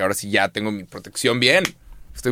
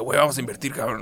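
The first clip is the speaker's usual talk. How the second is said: put-on boozy, hoarse, liquor-roughened voice; 2 semitones higher, 3 dB quieter than usual. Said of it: "la voz aguardientosa".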